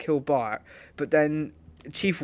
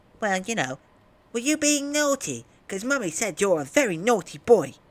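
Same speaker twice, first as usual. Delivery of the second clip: put-on high, swooping, cheeky, bouncy cartoon kid voice; 6 semitones higher than usual. Acting out a father-son scene, the speaker voices the son: Angry Kid voice. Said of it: "apparently I can do the kid".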